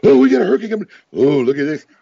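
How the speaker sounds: put-on high, gushing, excited TV news anchor voice. Imitating a local news anchor talking about a hurricane: imitating an excited newscaster. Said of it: "he's getting, like, all excited and stuff".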